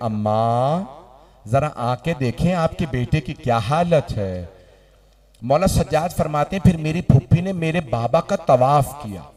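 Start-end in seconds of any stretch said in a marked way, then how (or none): none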